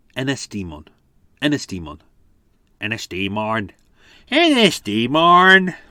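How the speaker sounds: awful put-on Irish accent, slow. Quiz host attempts to pronounce a place name, in a really awful Irish accent. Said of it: "in a really awful Irish accent there".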